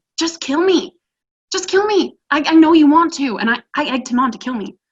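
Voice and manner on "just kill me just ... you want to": loud, high-pitched scream. Retelling screaming at a psychopath during a beating: retelling a scream. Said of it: "I just screamed at him. I said".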